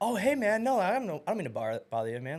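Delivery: mock overly sweet sing-song. Retelling answering angry people at their doors: imitating being overly nice. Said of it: "overly nice".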